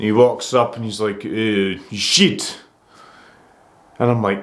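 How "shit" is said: put-on Polish accent with halting words. Retelling what a guy at the bar said: imitating a Polish accent. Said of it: "he was Polish just based off his accent".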